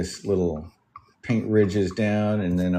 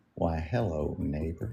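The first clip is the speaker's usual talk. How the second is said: quiet, soft, slow and deliberate voice; 7 dB quieter than usual. Comparing how Bob Ross and Mister Rogers spoke, demonstrate a quiet, methodical Mister Rogers voice. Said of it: "It was real quiet and thought out, methodical".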